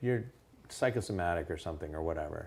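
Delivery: normal talking voice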